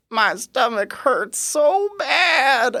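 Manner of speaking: very high, slow, quavering voice, stretching out "bad". Retelling what a man with a hurting stomach answered when asked how he was: imitating Mister Willie's quavering voice. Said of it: "this kind of quavering, high pitched voice".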